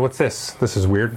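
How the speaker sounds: ordinary delivery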